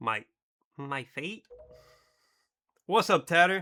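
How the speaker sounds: put-on child voice, Boston accent. Working out a voice for a character, Boston accent with a child's voice. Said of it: "do the Boston accent with a child's voice".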